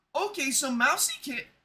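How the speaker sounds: voice cracks, breaking high mid-phrase. Playing Piggy while narrating, just after waking up: voice cracking. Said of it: "voice crack".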